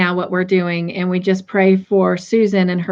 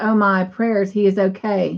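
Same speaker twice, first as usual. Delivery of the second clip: ordinary talk, nothing marked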